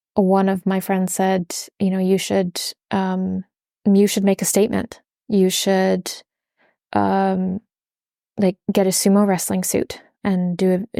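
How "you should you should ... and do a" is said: ordinary talk, nothing marked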